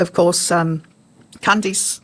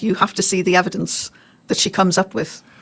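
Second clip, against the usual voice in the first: usual speaking voice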